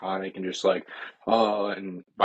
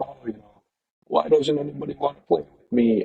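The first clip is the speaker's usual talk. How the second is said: silly, high, creaky, rough-edged goofy clown voice; 7 semitones higher than usual. Describing the movie version of the character: imitating goofy Pennywise. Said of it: "more goofy, and he's just kinda like".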